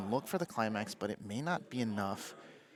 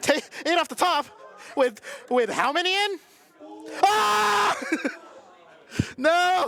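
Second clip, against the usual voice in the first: very high, ragged, rough yelling outburst; 11 dB louder than usual. Reacting to what they just watched, yelling. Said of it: "Sorry for yelling".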